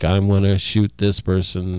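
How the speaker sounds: ordinary talk, nothing marked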